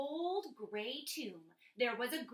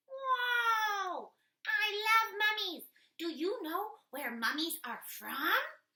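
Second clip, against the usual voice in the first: very high, loud puppet voice, stretched whoa; 9 semitones higher, 6 dB louder than usual. Reading aloud, she speaks as her puppet assistant in a puppet assistant voice. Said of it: "reads aloud ... with her puppet assistant".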